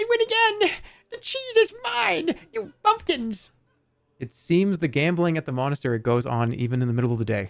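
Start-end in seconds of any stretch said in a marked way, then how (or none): 0.0-3.5 tiny, squeaky, very high rat voice. Narrating a story, a voice calls out from the rat race course, tiny voice. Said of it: "you can hear a tiny voice".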